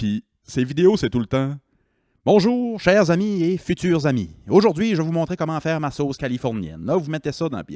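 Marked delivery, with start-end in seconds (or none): 2.2-7.8 put-on heavy Québécois accent laid on thick, pitched up. Speaker imitating a TikTok cooking host's videos: Christine's thick Québécois accent. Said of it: "Avec son gros accent de".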